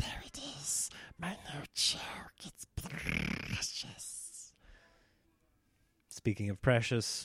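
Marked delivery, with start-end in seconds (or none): 0.0-4.5 very hushed, slow, clinging, possessive creature whisper. Describing clinging to a new joke that works, in a Smeagol voice. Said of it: "Smeagol in, in Lord of the Rings".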